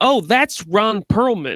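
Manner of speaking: slow, put-on announcing voice. Retelling spotting someone at a dog park: imitating own loud remark. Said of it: "I just loudly say".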